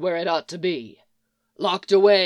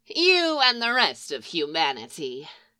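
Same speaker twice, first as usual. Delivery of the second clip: snorting hag voice, pitch swooping up and down. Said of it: "She snorts".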